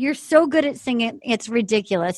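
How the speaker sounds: plain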